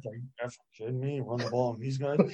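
feigned mumbling under breath. Retelling what he said under his breath, imitating someone muttering. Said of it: "under his breath".

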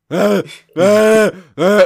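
very loud, shrill, high-pitched animal screaming. Acting out a beast-man screaming at a neighbour: imitating a beast screaming. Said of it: "screaming at him".

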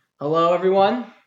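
loud, high-pitched, big announcer-style voice. Opening the first podcast episode with a greeting: saying it loud. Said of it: "You don't have to say it so loud".

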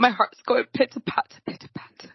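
put-on speaking with a British accent. A speaker says a line in a British accent, and the listener asks why. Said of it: "Why did you do a British accent?".

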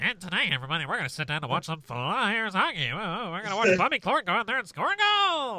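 put-on very loud, very high-pitched old radio announcer voice. Told he sounds like a 1930s broadcaster, he plays it up: Doc Emrick-style broadcaster voice. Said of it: "You sound like fucking Doc Emmerich".

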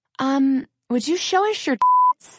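timid, coy, sheepish, high, drawn-out. Retelling how a stranger at a rally asked a favor: imitating a sheepish young man. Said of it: "a very sheepish young man come up to me".

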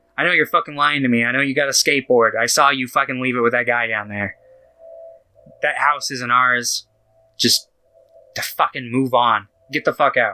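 put-on aggressive, outburst-like voice. Retelling a movie scene where the dad kicks Jimmy out: imitating an aggro dad. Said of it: "gets all super fucking aggro, and he goes".

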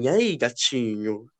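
put-on low, soft, strange old man voice. Retelling a message an old man sent them: strange old man's voice. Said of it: "Uma voz assim, né? Meio estranho".

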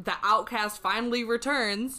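plain

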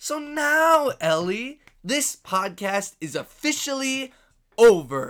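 angry, loud, deliberate, final-sounding delivery. Speaking to ellie on a podcast, mad. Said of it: "That's me being mad".

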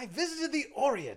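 very high-pitched colonial English colonel voice. Ask the other speaker about their colonial impression by acting it out in an English colonel voice. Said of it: "like an English colonel who's like".

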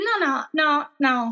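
ordinary talk

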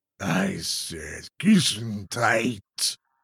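deep, growling werewolf monster voice. Reading a story, the werewolf answers Todd, deep growling werewolf voice. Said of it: "A deep, growling voice answers".

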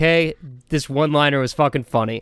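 ordinary talk

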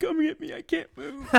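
very high, tearful, sobbing, crying voice. Retelling what he said when called on the phone, imitating him crying. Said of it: "I hear him like crying on the phone".

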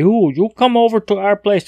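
very high, bad put-on Chinese accent. Acting out what they sit around and say: horrible Chinese accent. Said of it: "that's a horrible Chinese accent".

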